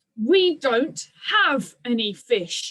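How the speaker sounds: forced out through clenched, gritted teeth. Narrator reading a character's reply to a dragon demanding fish, through gritted teeth. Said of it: "repeated Hiccup from between gritted teeth".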